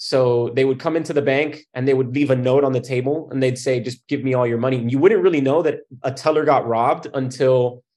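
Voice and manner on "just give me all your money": ordinary talk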